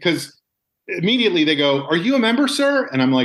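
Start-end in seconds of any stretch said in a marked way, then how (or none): 1.9-2.9 indignant, furious tone, very high-pitched. Retelling how lounge staff questioned them: imitating furious staff. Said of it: "they're all furious at me".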